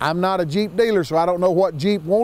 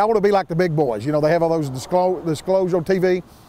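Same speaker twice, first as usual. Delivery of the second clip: normal talking voice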